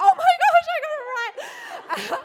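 acted astonished freak-out, very high, very loud. Retelling own reaction to guessing a stranger's name: imitating own freaked-out reaction. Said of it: "as freaked out as she was".

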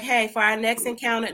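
ordinary talk

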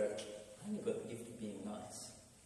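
very hushed, quiet, shy, bashful and embarrassed voice. Speaker acts out others admitting their gift, in a mock-shy, embarrassed voice. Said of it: "in a slightly shy and embarrassed voice would go".

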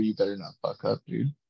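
put-on whisper. Imagining Roger Goodell whispering in someone's ear: Roger Goodell whispering. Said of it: "Roger Goodell right now whispering in his ear".

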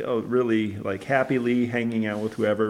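plain

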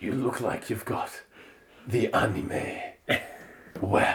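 put-on soft, breathy, sultry murmur in a Spanish accent. Narrating what Antonio says to Alita: Antonio's sexy Spanish accent. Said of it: "in his sexy Spanish accent".

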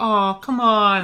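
put-on very high pleading child voice. Voicing a market kid begging a parent for a toy: child begging parent. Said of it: "And they're like".

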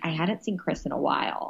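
mumbling, muttering under the breath. Retelling what a guest said while others talked over her: imitating muttering under her breath. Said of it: "under her breath".

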